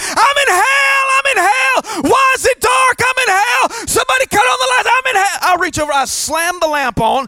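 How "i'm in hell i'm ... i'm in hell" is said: frantic, panicked yelling, very high and shrill. Retelling how a friend ran through the room: imitating someone screaming. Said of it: "screaming at the top of his lungs".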